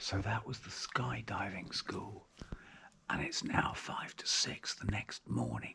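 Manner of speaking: very quiet, hushed, breathy whisper, barely voiced. Talking early in the morning while others sleep nearby, whispering. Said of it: "I'm whispering because there are other people sleeping".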